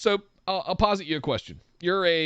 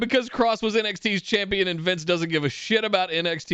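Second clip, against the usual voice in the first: usual speaking voice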